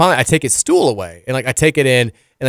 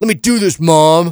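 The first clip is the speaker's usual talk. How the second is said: acted-out high, defiant, stubborn toddler voice; 5 semitones higher, 4 dB louder than usual. Retelling a two-year-old's words to his mom: imitating a defiant voice. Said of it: "this very like just defiant voice".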